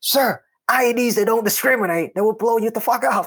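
put-on shrill, very high-pitched shout. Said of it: "yelling at me".

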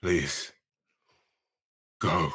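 hushed, very quiet, urging, pleading tone. Urging Jen to go while in character: quiet tone. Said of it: "in a very kind of, like, again, quiet tone".

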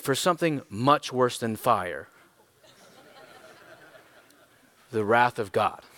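put-on refined, polished British accent, lecturing delivery. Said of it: "he has a British accent".

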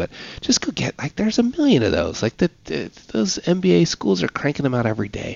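high-pitched stage whisper. Talking about hiring people who can execute, the speaker whispers so nobody hears. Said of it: "I'm whispering because I don't want anybody to hear me".

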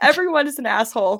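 exasperated sarcastic outburst, high and loud. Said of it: "And she's like".

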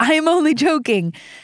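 forceful, emphatic exclamation-point reading. Rereading a Bible verse's last words aloud: with exclamation-point emphasis. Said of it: "I've gotta say it with that, that emphasis".

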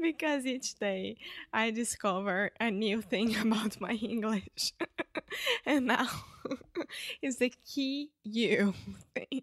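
giggling, laughing through the words. Explaining a pronunciation struggle to another speaker, laughing while talking. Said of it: "I can't stop laughing".

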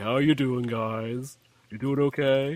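put-on lumbering brute fighter voice. Voicing the heavy fighter greeting the others: voicing a lumbering fighter. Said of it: "This is lumbering. Like".

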